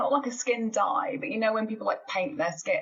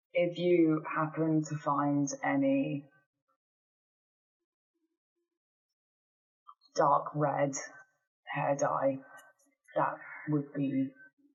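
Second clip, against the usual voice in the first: shy, very quiet voice, lower pitch; 5 semitones lower, 3 dB quieter than usual. Asking another party member for dark red hair dye: shy and very quiet. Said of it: "shyly say very quietly".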